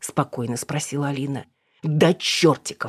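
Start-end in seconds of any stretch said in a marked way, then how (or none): 1.8-2.9 snapped, barking delivery. Narrating an argument, a man answers a woman's question: barked. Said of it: "рявкнул Эдик".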